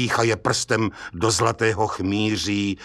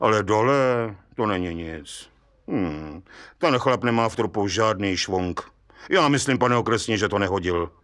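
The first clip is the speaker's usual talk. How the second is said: ordinary delivery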